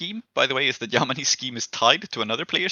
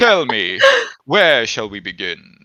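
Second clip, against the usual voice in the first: loud, intense, goofy, swooping romantic vampire voice; 8 dB louder than usual. Voicing a romantic, goofy vampire with a hand to his chest: romantic, goofy vampire voice. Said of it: "the intensity of a romantic, if goofy, vampire".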